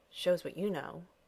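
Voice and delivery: muttering. Narrator reads a man answering a woman's remark, muttering. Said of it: "he muttered".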